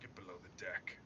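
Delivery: soft, unvoiced whisper.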